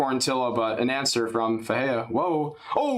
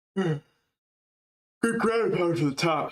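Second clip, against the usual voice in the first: yawning while speaking, higher pitch; 4 semitones higher than usual. Commentator calling a fight to viewers, yawning while speaking. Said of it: "I'm yawning".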